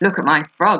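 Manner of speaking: ordinary delivery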